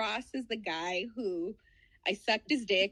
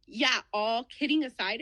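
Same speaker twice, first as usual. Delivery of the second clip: normal talking voice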